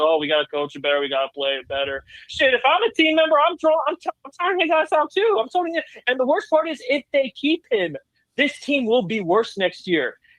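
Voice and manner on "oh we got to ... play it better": very deep, low, flat, level droning monotone. Complaining about a team's coach, repeat what he always says, imitating his droning voice. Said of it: "his drony ass voice that says".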